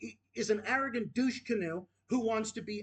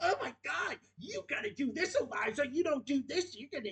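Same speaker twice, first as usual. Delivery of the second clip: high, mocking, pitched-up lecturing voice; 5 semitones higher than usual. Mid-rant, the speaker mimics someone in a Mr. Culpepper voice. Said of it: "with that fucking Mr. Culpepper voice".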